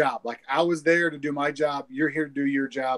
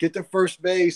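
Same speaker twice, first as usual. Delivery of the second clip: put-on hollering at a higher pitch; 4 semitones higher than usual. Speaker retelling the speaker's brother hollering from the dugout at a batter, imitating someone hollering. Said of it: "he's hollering at him".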